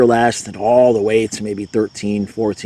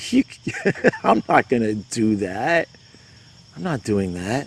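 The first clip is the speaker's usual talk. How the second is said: put-on laughing voice, quieter; 5 dB quieter than usual. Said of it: "I would have laughed and said".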